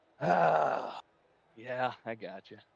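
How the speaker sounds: audibly frustrated, deflated voice. Answering the booth after a second place finish: frustrated voice.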